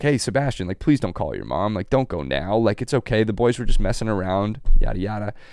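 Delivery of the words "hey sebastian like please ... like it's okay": acted, mock-pleading voice. Retelling how someone begged them not to call their mom, imitating someone pleading. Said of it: "Jim started pleading like".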